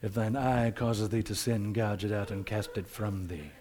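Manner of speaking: hushed, very quiet, gentle voice. Describing how we imagine a saying being spoken: soft Jesus voice. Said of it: "saying in the soft voice".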